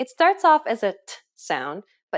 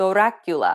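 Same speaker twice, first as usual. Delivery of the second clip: vampire count voice with trilled, rolled R; 2 semitones lower than usual. Showing how Dracula introduced himself, to practice the rolled R: Dracula introducing himself. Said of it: "how Dracula first introduced himself".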